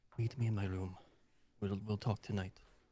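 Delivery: muttering under breath, barely moving lips. Voicing a character slipping a message to another: under his breath, barely moving lips. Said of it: "just under his breath right next to him".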